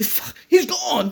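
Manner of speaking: put-on high, loud, slow awestruck child. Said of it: "He's like".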